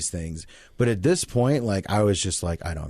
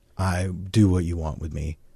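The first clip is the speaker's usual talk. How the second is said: cracking, broken voice; 2 semitones lower than usual. Retelling surrendering to family at a low point: imitating own broken voice. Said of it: "that broken".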